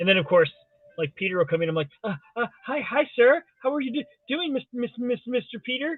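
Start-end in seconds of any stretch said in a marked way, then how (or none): 2.0-6.0 high stammering, stumbling, repeating every bit. Retelling greeting an important arrival on the broadcast: imitating own stammering greeting. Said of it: "Why are you talking like that, you dummy?".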